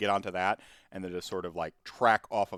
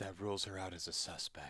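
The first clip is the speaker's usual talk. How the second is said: soft, hushed half-whisper; 12 dB quieter than usual. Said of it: "I whisper to".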